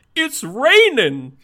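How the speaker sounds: piercing, very high, full-volume cartoon shout. Retelling how Goofy shouts at players in a game when it rains: Goofy shouting. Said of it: "he will shout at you".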